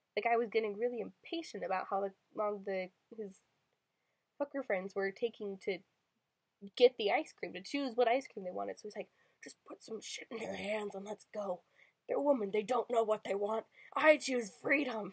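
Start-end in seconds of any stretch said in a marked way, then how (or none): 9.4-15.1 put-on heavy smoker's voice, lower and quieter. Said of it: "the guy sounds like he smokes six packs a day".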